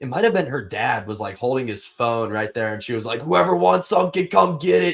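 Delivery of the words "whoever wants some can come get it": mock furious, fired-up, high, angry yell. Recalling a fighter's promo yelled at a phone, the speaker imitates her angry yell. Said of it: "she was like all angry, like yelling".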